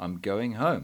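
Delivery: ordinary delivery, nothing marked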